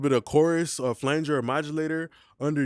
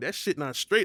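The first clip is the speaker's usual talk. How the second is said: plain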